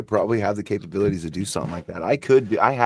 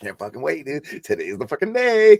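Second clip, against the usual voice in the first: put-on high, swooping, eager, worked-up old man voice; 6 semitones higher than usual. Imitating an old man waiting for kids: imitating an excited old man. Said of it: "He's all excited".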